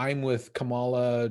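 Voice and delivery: plain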